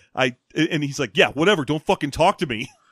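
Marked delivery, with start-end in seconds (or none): 1.1-2.6 mock petulant, sulking retort tone. Acting out a character's reply after being refused: imitating a petulant retort. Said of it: "Jetro's response is to get petulant".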